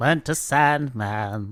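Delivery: put-on relaxed, chill rock-style singing. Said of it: "That's an excellent [name] impression".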